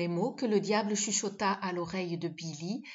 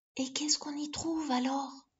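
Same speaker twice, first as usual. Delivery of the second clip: high, murmuring voice; 7 semitones higher than usual. Billy asks the devil a question, murmuring. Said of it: "Murmura Billy".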